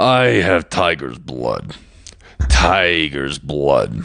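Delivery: very slow, drawn-out put-on creature voice, words stretched. Reading out a viewer's reference line: Stitch voice. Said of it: "So Stitch voice again".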